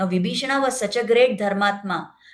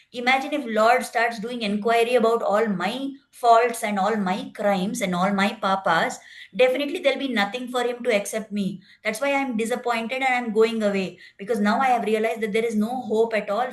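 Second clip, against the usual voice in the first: normal talking voice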